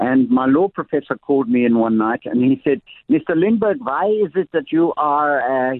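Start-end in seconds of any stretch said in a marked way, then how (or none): 3.1-5.7 put-on German accent, higher pitch. Retelling what a law professor said to a student: German accent. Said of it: "he had a German accent, by the way".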